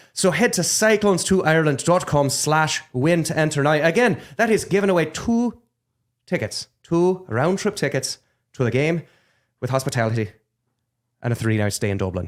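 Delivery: convincing, spot-on put-on Irish accent. Reading an ad, Irish accent. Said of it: "It upsets me how good your accent is".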